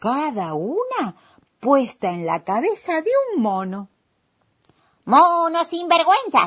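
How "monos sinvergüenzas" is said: full, high, raised shout. The little man yells at the monkeys who took his caps, shouting. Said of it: "gritó el hombrecito levantando los brazos".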